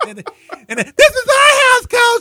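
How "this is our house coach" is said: put-on very high, very loud, full-throated kid scream. Retelling a movie scene where a kid on the platform screams: imitating a kid screaming. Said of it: "he screams".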